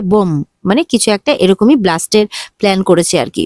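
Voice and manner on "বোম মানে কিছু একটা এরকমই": plain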